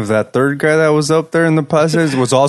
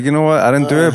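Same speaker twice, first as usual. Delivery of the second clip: ordinary talk, nothing marked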